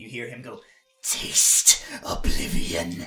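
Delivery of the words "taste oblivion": hissing through gritted teeth. Voicing an enemy over a fallen character: hissed through teeth. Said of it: "he hisses, like, through his teeth".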